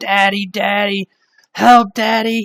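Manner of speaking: mock, very high, drawn-out sobbing child's cry. Voicing a small child held hostage, crying child calling for daddy.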